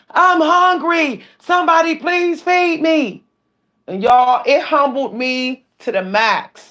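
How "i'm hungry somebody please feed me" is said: pitched-up, desperate crying scream. Retelling what a man screamed at the top of his lungs, a desperate scream. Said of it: "scream at the top of his lungs".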